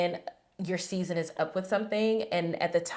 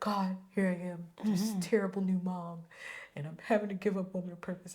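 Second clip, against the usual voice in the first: put-on tearful crying voice, quieter; 6 dB quieter than usual. Retelling praying to god alone at home: retelling a tearful prayer. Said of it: "I was sitting in my house crying".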